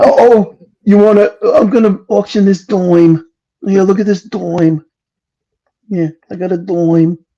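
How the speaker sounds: put-on New York Long Island accent. Making fun of someone's voice, auctioning a dime: imitating Average Jane's Long Island accent. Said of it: "make fun of Average Jane's voice 'cause she's got that thick-ass Long Island accent".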